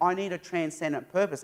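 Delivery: ordinary delivery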